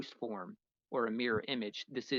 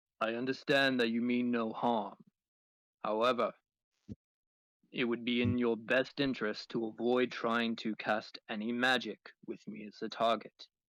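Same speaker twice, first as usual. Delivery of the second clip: very deep male character voice. Game master voicing Soxray speaking telepathically to a player, Soxray's very deep male voice. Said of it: "This is a very deep, very male voice".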